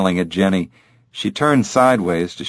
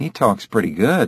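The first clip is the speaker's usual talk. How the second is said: plain reading voice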